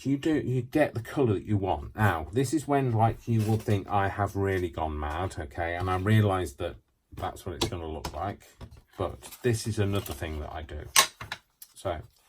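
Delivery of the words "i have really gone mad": ordinary delivery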